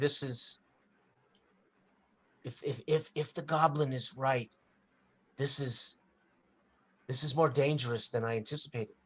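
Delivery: hushed whisper. Game master voicing a character who sidles up to a player, whispering. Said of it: "she basically whispers to you".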